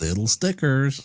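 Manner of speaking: put-on high-pitched, slow, dodgy American accent. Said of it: "a hard, dodgy American accent".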